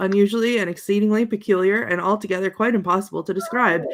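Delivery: plain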